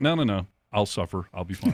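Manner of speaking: ordinary talk, nothing marked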